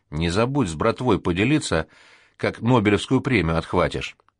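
ordinary delivery, nothing marked

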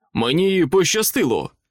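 sudden exclaiming, calling out. Narrator reads a character's line as he walks up to the group, exclaimed. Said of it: "вигукнув Джолібі".

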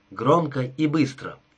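ordinary delivery

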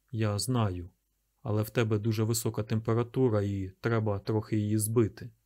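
plain reading voice

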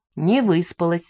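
plain reading voice

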